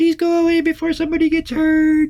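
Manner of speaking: very high, tiny, small squeak of a voice. Describing a player's voice drowned out by a roaring yeti, tiny little voice. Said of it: "this tiny little voice on top going".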